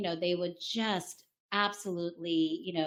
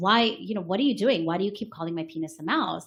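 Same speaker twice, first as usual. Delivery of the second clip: put-on frustration, faster. Telling a joke, voicing a man questioning his bride, mock-frustrated. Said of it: "very frustrated".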